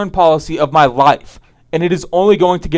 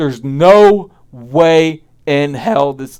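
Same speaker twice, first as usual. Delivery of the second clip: voice cracking, lower, slower; 2 semitones lower than usual. Mid-rant to the audience, voice cracking. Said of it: "what a voice crack".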